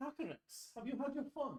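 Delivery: put-on very high, pushed, heavier Scottish accent. Voicing a character who addresses a dragon, in a Scottish accent. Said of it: "Also Scottish".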